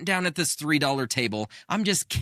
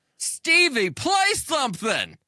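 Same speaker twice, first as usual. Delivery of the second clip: acted, slurred, very high-pitched yell; 13 semitones higher, 4 dB louder than usual. Retelling a man at the blackjack table shouting at Stevie, retelling a slurred yell. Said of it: "yelling in his slurred voice".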